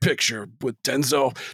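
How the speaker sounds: movie trailer announcer voice. Joking about a film trailer in the old trailer narrator style: movie trailer voice guy. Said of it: "the movie voice guy".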